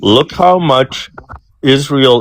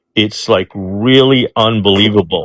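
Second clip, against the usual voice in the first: normal talking voice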